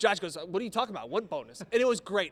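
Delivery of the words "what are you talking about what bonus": play-acted deadpan, rattled off dead dry. Retelling a postgame answer to a reporter's question, retelling a deadpan answer. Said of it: "It was really a deadpan answer".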